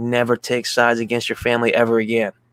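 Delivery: ordinary talk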